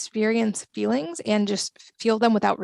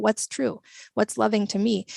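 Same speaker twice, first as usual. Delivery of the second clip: ordinary delivery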